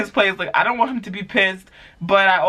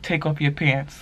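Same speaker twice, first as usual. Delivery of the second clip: put-on whisper, lower and quieter; 5 semitones lower, 5 dB quieter than usual. Retelling how a guy leaned in during a movie: imitating a whisper. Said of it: "he leans into me and he whispers in my ear".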